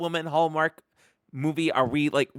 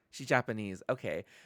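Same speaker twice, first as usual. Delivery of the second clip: plain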